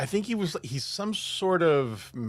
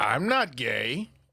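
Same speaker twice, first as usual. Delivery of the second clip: put-on offended tone, lower; 5 semitones lower than usual. Retelling a reporter's interview with a gang leader: imitating an offended denial. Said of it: "he looks offended".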